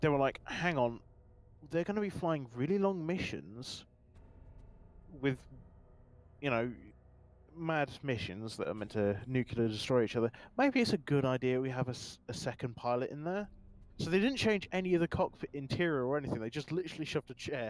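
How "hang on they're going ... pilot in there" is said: usual speaking voice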